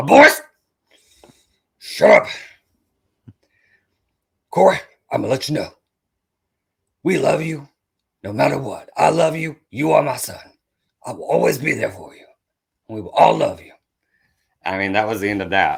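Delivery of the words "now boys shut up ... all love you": loud, raspy, gruff military drill-sergeant voice. Retelling his dad talking to the boys, impression of drill-sergeant dad. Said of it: "my impression of him".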